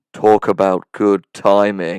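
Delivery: completely flat, very loud, low deadpan monotone. Recapping a scene, the speaker quotes Matt in the stairwell, Matt's monotone delivery. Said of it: "in a completely monotone voice says".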